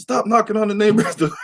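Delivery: put-on screaming voice, very high pitched. Retelling how mom screamed from the house late at night: imitating mom screaming. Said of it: "mom screaming at me like".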